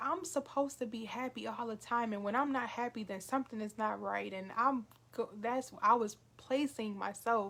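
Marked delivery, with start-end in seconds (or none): none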